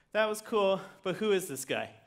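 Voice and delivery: normal talking voice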